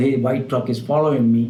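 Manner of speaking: ordinary talk, nothing marked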